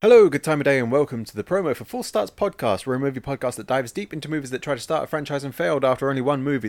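breakneck, rapid-fire, rattled-off delivery. Host opening a promo for Four Starts Podcast, talking very fast. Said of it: "The reason I'm talking so fast".

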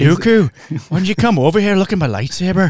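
put-on over-the-top Irish accent, loud and high. Mocking an audiobook narrator's Qui-Gon: over-the-top Irish Liam Neeson voice. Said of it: "even Liam Neeson is not that Irish".

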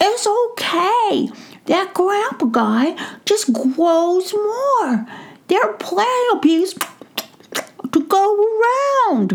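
very high, slow, tiny squeaky voice, mouth full. Reading a story, the narrator voices the mouse answering the gnome: squeaky Brisbane mouse voice. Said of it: "He recognized that it was [name] the mouse, ... [name] heard a squeaky voice right outside of the coop door".

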